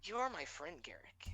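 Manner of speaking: hushed, eerie half-whispering voice. A game master voices the void half-whispering to Garrick: void half-whisper. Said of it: "you hear the void whispers to you".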